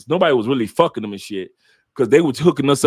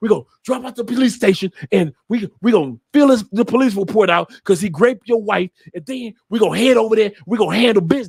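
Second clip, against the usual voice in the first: mock worked-up, excited, eager, gung-ho tone; 5 semitones higher than usual. Retelling own past words about heading to the police station: imitating own excited voice. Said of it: "how I literally said it with excitement".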